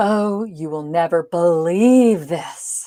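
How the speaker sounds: slow, theatrical, dramatic delivery with stretched-out words. Demonstrating how lengthening words adds drama: dramatic, drawn-out delivery. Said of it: "duration goes hand in hand with a bit of that drama".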